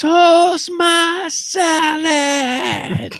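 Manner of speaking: very high-pitched, loud yell. Retelling what a guy yelled at them every day, retelling a yell. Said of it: "this guy yelled at me".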